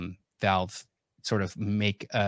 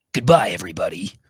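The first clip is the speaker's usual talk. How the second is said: raised, big, loud heroic voice; 8 dB louder than usual. Saying goodbye to everybody at the end of the talk, best Snake impression. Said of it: "That's my best snake".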